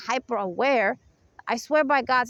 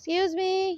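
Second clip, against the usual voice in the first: soft, gentle, pitched-up, non-threatening polite tone; 7 semitones higher than usual. Showing the covert voice used in place of a deep, aggressive one: soft, gentle voice. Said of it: "Even though my voice is not like that, my voice is very deep and aggressive. I have to change it".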